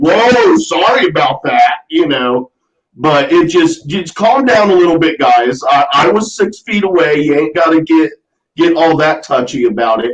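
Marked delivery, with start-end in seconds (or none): 0.0-1.8 mock, heavily sarcastic, swooping tone. Retelling a remark to a woman at the register: imitating own sarcastic apology. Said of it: "I very sarcastically was like".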